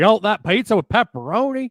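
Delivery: put-on Southern US accent, loud and high. Imitating a restaurant server with a southern accent. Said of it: "a guy with a southern accent".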